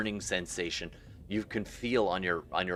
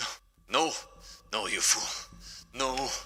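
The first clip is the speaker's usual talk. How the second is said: terrified, frightened, panicked pleading voice; 4 semitones higher than usual. Voicing a voice in a swimmer's ear as they dive: terrified panicked voice. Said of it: "terrified, panic voice in your ear".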